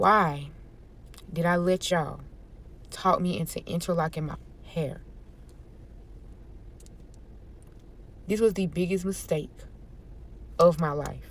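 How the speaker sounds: hushed, breathy near-whisper, holding back tears. Speaker tells viewers about interlocking their hair; holding back tears. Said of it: "I'm trying my best not to cry".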